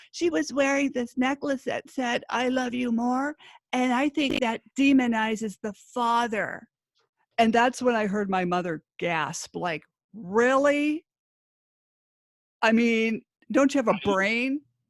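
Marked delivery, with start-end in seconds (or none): 0.1-6.6 scraping, irritating, grating, nails-on-chalkboard voice. Retelling a woman's testimony on the stand, imitating her grating voice. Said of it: "she kind of talks like this".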